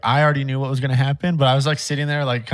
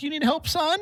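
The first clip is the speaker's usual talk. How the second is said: put-on very high-pitched elderly woman's voice; 5 dB quieter than usual. Acting out an imagined scene where a customer offers help: old lady voice. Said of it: "It's like an old lady too".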